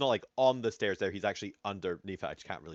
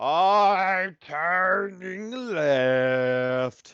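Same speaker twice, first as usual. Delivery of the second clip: very croaky, high, loud, with stretched I'm; 10 semitones higher, 9 dB louder than usual. Voicing Renar calling out, in Renar's very croaky voice. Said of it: "call out in this very croaky voice".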